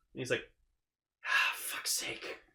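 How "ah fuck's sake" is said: low, slow whisper under the breath. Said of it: "I could hear it in his head".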